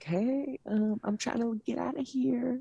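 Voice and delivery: slow, high, hushed half-whisper, barely audible. Retelling what they said when a girl came up to them, half-whispering. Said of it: "Why are you whispering?".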